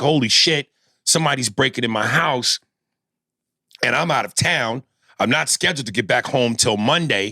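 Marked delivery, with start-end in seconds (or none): none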